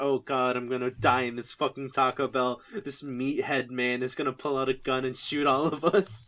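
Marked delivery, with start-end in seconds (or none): none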